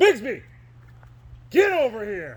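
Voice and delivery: loud, swooping, scolding holler. Retelling calling Bigsby over while Roscoe stares, retelling yelling at Bigsby. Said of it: "And I'm yelling at Bigsby".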